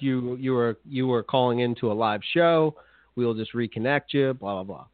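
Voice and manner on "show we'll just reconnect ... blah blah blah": normal talking voice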